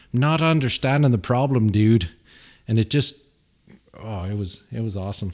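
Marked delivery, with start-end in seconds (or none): 0.1-2.1 put-on Irish accent, said loud. Retelling what an engineer at work said about an issue: imitating an Irish coworker. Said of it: "sounded so weird coming from an Irish guy".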